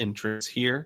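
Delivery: ordinary talk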